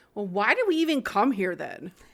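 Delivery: put-on snotty kid voice. Retelling a kid's line to his parents: imitating Billy's snotty tone. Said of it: "he says it in such, like, a snotty kind of way".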